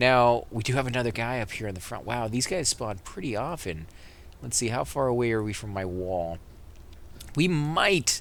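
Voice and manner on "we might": might lifted high in pitch. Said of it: "and I stress the word might".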